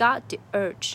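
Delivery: GOT punched with loud stress.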